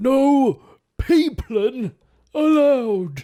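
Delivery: very high, swooping cartoon sailor-bear voice. Quoting a cartoon sailor bear from a film: impression of a sailor bear. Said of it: "That's a good impression".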